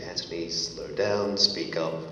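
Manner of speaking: plain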